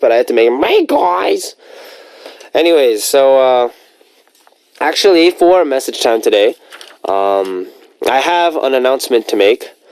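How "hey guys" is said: high, pitched-up, put-on mascot voice. Showing the hard voice picked for the mascot Yuji: Yuji mascot voice. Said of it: "I picked such a hard voice for Yuji to do".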